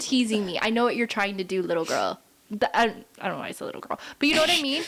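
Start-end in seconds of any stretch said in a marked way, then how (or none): 0.0-2.2 mock, put-on dominant man's tone. Acting out a dominant man answering a teasing woman, mock-dominant. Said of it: "he definitely has more of like a, a dominant vibe".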